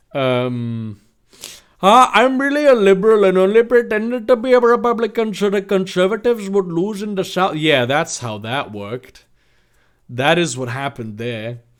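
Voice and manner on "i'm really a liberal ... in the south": put-on Indian-accented character voice. Answering a question about being a Republican, as Abraham Lincoln with an Indian accent. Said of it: "Abraham Lincoln with an Indian accent".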